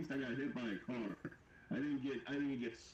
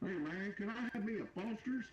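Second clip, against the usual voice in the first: heavy put-on broad Midwestern American accent, slow and high; 9 semitones higher than usual. Joking about an american trying to fit in by ordering a foster's: super midwestern accent. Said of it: "super middle Midwestern accent".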